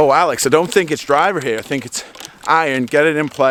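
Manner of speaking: bad put-on American accent, pitched high. Act out the American caddy advising you on a club, in a terrible American accent as [name]. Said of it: "I'm going to do a terrible accent now".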